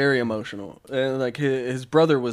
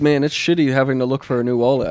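ordinary talk, nothing marked

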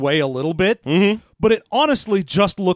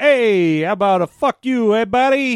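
put-on Italian American accent, higher pitch; 5 semitones higher, 3 dB louder than usual. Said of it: "obviously she's an Italian American. That's why she talks like that".

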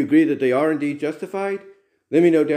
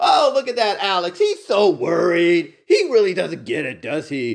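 scornful, mocking, jeering ha-ha laughter; 3 semitones higher than usual. Acting out people who laugh at a worried person, mock laughing taunt. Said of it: "They're laughing at you".

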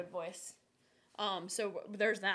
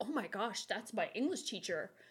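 ordinary talk

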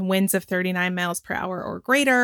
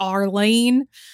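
American South accent. Listing 2023 Atlantic names, Arlene in a Southern accent. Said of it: "I can't help but say Arlene with a southern accent".

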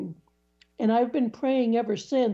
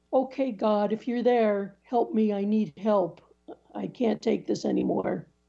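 mock-gruff, acted gruff tone. Recalling praying to god for help while grouchy, retelling own gruff prayer. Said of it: "So in a very gruff tone".

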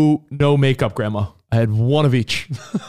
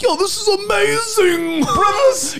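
put-on childlike wonder, much higher and slower. Telling others what Covino is like anywhere you go with him, imitating Covino's childlike wonder. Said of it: "He has a childlike wonder".

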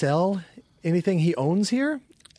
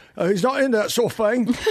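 put-on Cockney accent, much higher pitch; 5 semitones higher than usual. Recalling one of the two lines the speaker had in a show: Cockney accent. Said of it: "I had a Cockney accent that I could say".

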